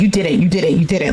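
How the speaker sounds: curt, dismissive, shutting-down tone. Retelling a breakup argument, imitating someone dismissively shutting her down. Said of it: "shutting her down".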